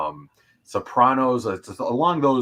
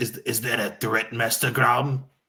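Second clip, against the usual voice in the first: put-on scheming villain voice under a normal-sounding tone. Joking about a secret Sith Lord while addressing Master Grom, do a little Palpatine impression. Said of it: "That was my little Palpatine impression".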